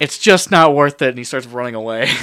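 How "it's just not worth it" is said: frantic, very loud, full-throated panicked screaming. Narrating a fight, voicing the other guy as he runs away: panicked yell. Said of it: "in panicked yell".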